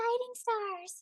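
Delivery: very airy, breathy voice with very high pitch. Demonstrating each character's voice in turn, airy Layla voice. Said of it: "Layla is very airy".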